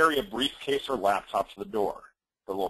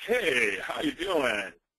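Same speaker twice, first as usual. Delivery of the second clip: very slow, overeager, schmoozy used-car salesman voice; 2 semitones higher than usual. Giving door-knocking advice, showing what not to do: overly enthusiastic salesman voice. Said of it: "don't be the used car salesman".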